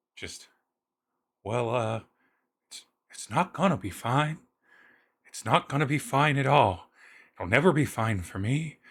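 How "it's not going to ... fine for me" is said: very quiet, hushed voice. Answering the big-brother voice's reassurance, in the quietest voice. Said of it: "You get the quietest voice back".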